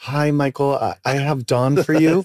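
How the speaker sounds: apologetic, sorry-sounding, hesitant tone. Retelling how Patty would call to put Don through: imitating Patty's apologetic tone. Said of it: "with this sort of apologist, uh, apologetic".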